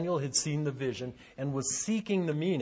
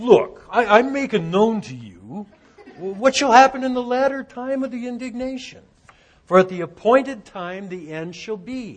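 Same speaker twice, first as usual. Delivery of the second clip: raised, pitched-up New York Bronx accent; 6 semitones higher, 8 dB louder than usual. Reading verse 19, the speaker voices the angel in a New York accent. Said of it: "I always hear this in like a New York accent".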